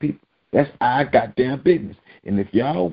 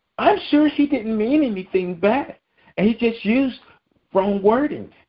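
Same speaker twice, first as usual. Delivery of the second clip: very high-pitched put-on woman voice; 9 semitones higher than usual.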